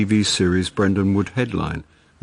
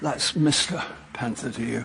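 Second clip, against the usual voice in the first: out of breath, panting, quieter; 3 semitones higher, 8 dB quieter than usual. Mr. panther, accused of lying, answers his accuser out of breath. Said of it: "Why is Mr. Panther out of breath?".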